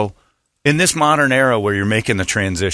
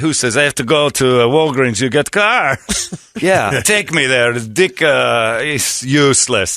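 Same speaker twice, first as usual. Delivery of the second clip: loose put-on Greek accent; 3 semitones higher than usual. Retelling how a man asked her to take him to walgreens: put-on greek accent. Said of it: "I don't even know if that's a Greek accent".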